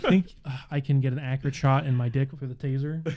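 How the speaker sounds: ordinary talk, nothing marked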